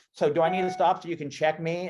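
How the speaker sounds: mock, high, loudly yelled-out voice. Retelling calling out at a check station at night: imitating own past yell. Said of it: "I yelled out".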